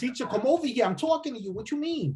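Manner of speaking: put-on fast, high, rattled-off Puerto Rican accent. Describing to co-hosts how Puerto Ricans talk, Puerto Rican accent. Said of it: "Puerto Ricans are like, ... Real fast".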